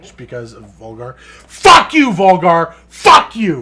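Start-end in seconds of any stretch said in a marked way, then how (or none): 1.2-3.6 raging scream, very loud, very slow and drawn out. Venting at a game character after losing: screaming in anger. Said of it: "I need to scream a little bit".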